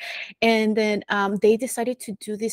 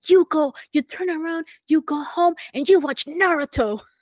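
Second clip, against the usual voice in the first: high-pitched mock scolding yell; 7 semitones higher, 4 dB louder than usual. Retelling a funny video of a man at a kid: imitating a man yelling at a kid. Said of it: "the guy was yelling".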